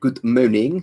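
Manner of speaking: bad French accent. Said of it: "the crab tray incorrect pronunciation of French".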